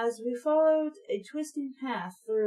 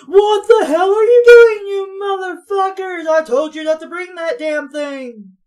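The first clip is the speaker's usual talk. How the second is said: very loud, booming bellowing rant, pitched up; 7 semitones higher, 14 dB louder than usual. Narrator voicing Dad shouting at Pat and Nat, in a booming dad voice. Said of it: "he has a booming voice. So he sounds like this".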